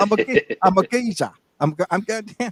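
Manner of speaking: loud, high, terrible put-on Cockney accent. You keep doing the accent after being told it is terrible; terrible put-on Cockney accent. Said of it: "somebody from the East End of London heard that accent".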